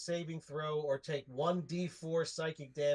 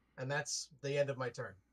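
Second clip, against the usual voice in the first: usual speaking voice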